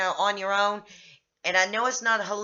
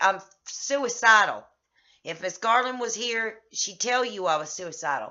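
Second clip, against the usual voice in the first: usual speaking voice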